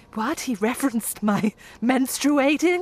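put-on American accent. Quoting a line from a film trailer, doing a Charlize Theron American accent. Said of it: "is that your American accent?".

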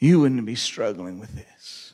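mock whispering. Acting out the enemy's whispers in your ear: imitating a whisper. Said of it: "The whisper is something like this".

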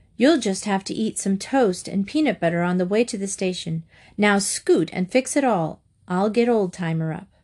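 plain reading voice

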